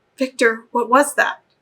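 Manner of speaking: hushed, hissing whisper. Narrator reading a sister confronting victor, in a hushed hissing whisper. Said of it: "She spoke to him in hushed whispers".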